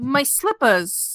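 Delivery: put-on upper-class New England accent. An actor gives the director another take, in a highbrow New England accent. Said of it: "highbrow New England".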